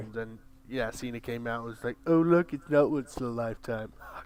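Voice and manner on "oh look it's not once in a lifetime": put-on patronizing, mocking, loud condescending sneer. Quoting what someone said at the Rumble, in put-on condescending, mocking voice. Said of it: "this condescending mocking voice".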